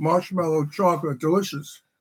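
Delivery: speaking while chewing, mouth full of food. Asked to talk to everyone while a co-host fixes things, the speaker talks with a full mouth. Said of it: "My mouth is full of pinwheel".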